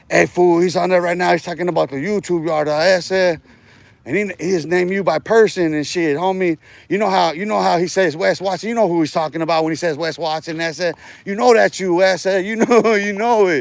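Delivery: ordinary talk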